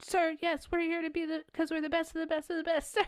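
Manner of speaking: very high, proper, by-the-book military-style speech. Retelling a military recruit's answer in a film scene: imitating proper military talk. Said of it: "talks very, like, military properly".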